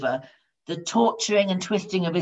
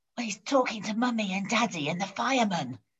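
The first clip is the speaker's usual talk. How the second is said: put-on hushed, half-whispered little-kid voice; 3 semitones higher, 8 dB quieter than usual. Narrating a child's reply to the boss on the phone, a child's half-whispered reply. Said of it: "came the whispered response".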